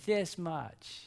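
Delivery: play-acted, sarcastic little reply. Retelling a granddaughter's grinning answer, imitating Kinley's sarcastic reply. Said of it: "a spirit of sarcasm".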